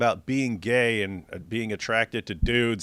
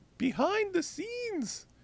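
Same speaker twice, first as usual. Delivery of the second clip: heavy stress, "behind" stretched out slow and high. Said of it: "emphasis on behind".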